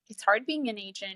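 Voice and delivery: plain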